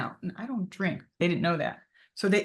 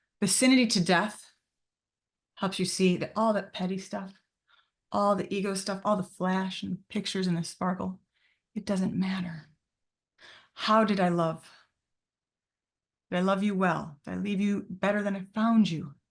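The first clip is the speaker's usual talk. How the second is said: slightly choked-up, emotional voice. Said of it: "I get a little choked up".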